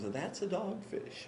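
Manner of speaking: put-on hushed New England accent. Quoting a man's answer to his question, in a New England accent. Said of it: "with his New England accent".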